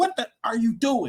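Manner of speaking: mock high-pitched screaming. Retelling screaming at the Denver game: retelling a scream. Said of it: "just screaming".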